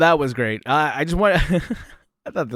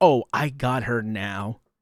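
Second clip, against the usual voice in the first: very slow, drawn-out, self-satisfied smug drawl, acted out; 5 semitones lower, 4 dB quieter than usual. Reacting to a clip, imitating a woman who thinks she's right: imitating a smug, self-satisfied tone. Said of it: "You could tell in the way that she talks".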